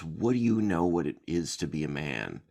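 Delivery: snarling, growling voice. Quoting a character's line from a film, with a snarling growl. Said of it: "he just snarls".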